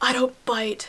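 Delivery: hushed half-whisper, very close and intimate. Retelling how a date leaned close to the ear: imitating a half-whisper. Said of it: "And whispers".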